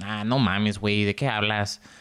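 casual, low-pitched Mexican Spanish accent. Explaining how phrases help them fall into an accent, demonstrating a Mexican accent. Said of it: "like, the Mexican accent".

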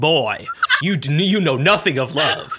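slow, aggressive, combative, confrontational delivery. Imitating the other speaker lecturing a boy: imitating someone aggressive. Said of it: "Why do I sound so aggressive?".

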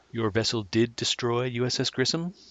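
put-on condescending tone. Recapping an episode, the speaker quotes Sarek of Vulcan: mock-condescending Sarek impression. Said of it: "in a condescending way".

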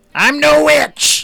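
hammed-up, overacted character voice. Answering a soldier who calls the character a witch: hammed-up in-character protest. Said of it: "I'm leaning thick into it".

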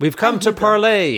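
very high, booming, seemingly magically amplified voice. A player character uses magic to call through a door: magically booming loud voice. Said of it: "I'll use thaumaturgy and make myself real loud".

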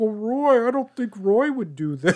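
pathetic high voice. Retelling a scene where Reeves doubts Roy: imitating Reeves's pathetic voice. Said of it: "Sorry, this is my voice".

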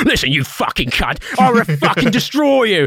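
put-on shrill, furious rant in a strong Essex accent. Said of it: "full on fucking Essex in his face".

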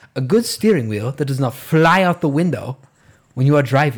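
put-on old man voice. Quoting the old guy from the focus group scene: impersonating the old guy. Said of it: "You're pretty good at that".

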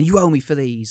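mock, put-on angry woman's voice. Retelling a woman's line to a man she's annoyed at, imitating an angry woman. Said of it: "she's really angry with him".

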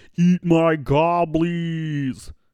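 slow-motion delivery, "goblies" drawn out. Retelling finding paintballs with friends at Walmart late at night, in a slow-motion voice. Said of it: "in slow motion voice said".

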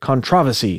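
controversy said the English way, British accent. Trying to say a word the way english people say it, british pronunciation of controversy. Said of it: "how do the English people say it?".

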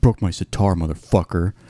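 put-on pouty, sulky, brooding little-kid voice. Retelling a documentary scene of someone sitting outside the venue: imitating a brooding, childish sulk. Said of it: "brooding like this, you know, like a little kid".

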